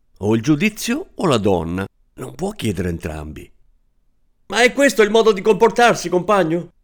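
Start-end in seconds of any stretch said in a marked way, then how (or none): 4.5-6.7 high, shrill, desperate angry yell. Narrator reads mr. zadurecki shouting at the narrator in desperate anger. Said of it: "Mi urlò il signor Zadurecki con rabbia disperata".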